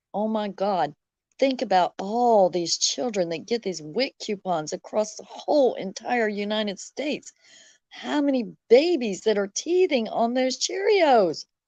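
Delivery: ordinary delivery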